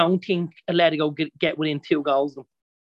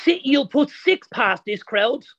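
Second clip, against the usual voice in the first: put-on very high ranting shout; 10 semitones higher than usual. Retelling a man who ranted for ninety minutes, imitating him shouting. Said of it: "he just kept shouting".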